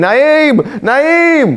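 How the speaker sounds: very high, piercing scream. Telling a story, acting out a mother screaming her son's name. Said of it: "I would have been screaming".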